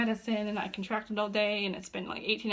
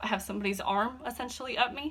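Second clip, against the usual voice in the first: ordinary talk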